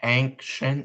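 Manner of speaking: ancient said slowly, stretched out. Asked to say the word and then say it slowly, saying it slowly. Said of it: "say it and then say it slowly".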